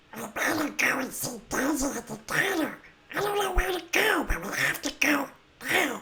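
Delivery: high-pitched cartoon duck voice. Performing a chat request for a Donald Duck impression: Donald Duck voice. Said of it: "So there's Donald Duck".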